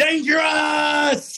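very high, very loud yelled call. Asked to deliver the word like he said it: imitating someone yelling a call. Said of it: "Can you deliver it like he said it?".

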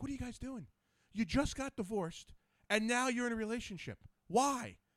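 high yelling voice. Retelling what he yelled at players on his team: imitating himself yelling. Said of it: "I'm yelling at 'em".

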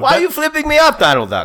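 put-on Croatian accent. Playing Croatia as a person in a joke bit: put-on Croatian accent. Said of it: "That's such an accurate accent".

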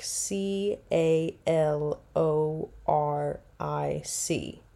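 caloric spelled out slowly, letter by letter. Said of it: "It is pronounced caloric".

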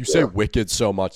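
ordinary talk, nothing marked

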